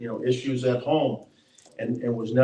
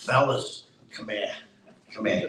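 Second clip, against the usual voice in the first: put-on thick Boston accent; 3 dB quieter than usual. Speaker retells the coach calling players over before practice, Coach Mackey's thick Boston brogue. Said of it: "this thick Boston brogue".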